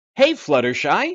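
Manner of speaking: very loud, high, clumsy cartoon pony voice. Voicing a pony from a show you have never watched, in a bad Rainbow Dash voice. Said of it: "my pony voices are not the best".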